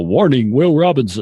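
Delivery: retro TV sci-fi robot voice. Joking about what listeners picture when hearing robots: Lost in Space robot voice. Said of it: "the robot from Lost in Space".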